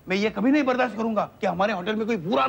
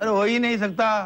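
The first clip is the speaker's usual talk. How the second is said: ordinary delivery, nothing marked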